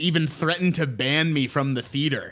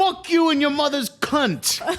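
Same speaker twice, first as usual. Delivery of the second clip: very high, squeaky put-on Jersey wise-guy attitude; 11 semitones higher than usual. Imagining movie theater staff snapping at a customer: put-on Jersey attitude. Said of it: "maybe it's that Jersey attitude coming out".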